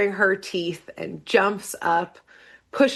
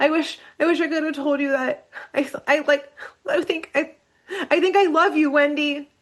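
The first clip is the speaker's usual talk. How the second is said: put-on crying, high, faltering through sobs; 7 semitones higher than usual. Retelling a scene, acting out Dipper sobbing over Wendy: imitating Dipper crying. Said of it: "He starts crying".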